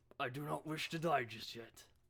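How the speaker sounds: woman doing a manly, masculine-sounding voice. Game master voicing a woman who drops her spear and backs off, manly voice. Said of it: "Very manly voice for a woman".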